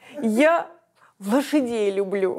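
speaking while choking with, barely holding back laughter. Recalling a man admitting he hadn't read the script, choking with laughter. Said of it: "(давясь смехом)".

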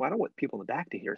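whispering. Demonstrating how talking this way draws people in, whispering. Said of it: "I'm whispering".

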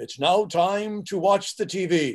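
slow, drawn-out put-on announcer voice. Recalling walking around the house announcing things: announcer voice. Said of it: "announce things in my announcer voice".

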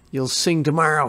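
spoken with a snarl. Narrating a schoolyard bully twisting the narrator's arm, snarling. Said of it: "he snarled".

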